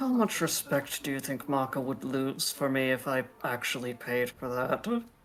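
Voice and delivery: low, hushed half-whisper in the background. A character half-whispers a question to another in the background: half-whispering. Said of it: "Eshe just whispers to Percival in the background".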